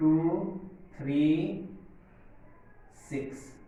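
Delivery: digits spoken separately with pauses between them. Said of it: "कैसे लिखेंगे".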